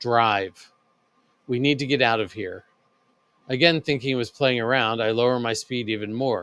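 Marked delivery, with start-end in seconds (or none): 0.0-2.7 low, pressing, serious, urgent voice. Reading a story where the brother warns the driver: low urgent voice. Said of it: "in low but urgent voice".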